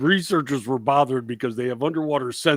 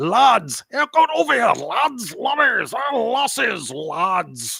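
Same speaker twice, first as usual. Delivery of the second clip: put-on boisterous loud Scottish hollering, "lads" drawn out; 8 semitones higher than usual. Imitating the Scottish fishermen in a film: imitating boisterous loud Scottish fishermen. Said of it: "all you hear from them is boisterous, loud talking".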